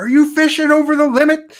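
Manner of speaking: mock very high, shrill, loud yell. Recalling screaming a question at a man in front of people, retelling a scream. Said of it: "I'm screaming at this guy like".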